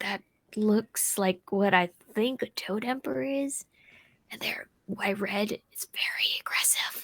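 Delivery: barely audible whisper. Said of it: "Trying to whisper as, as quietly as possible".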